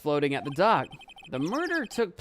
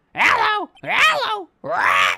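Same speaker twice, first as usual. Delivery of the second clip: shrill, blaring, swooping, very high, loud parrot squawk; 13 semitones higher, 10 dB louder than usual. Pitying the abandoned parrot, the speaker mimics it: Polly parrot voice. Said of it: "You like my parrot impression?".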